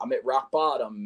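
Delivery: normal talking voice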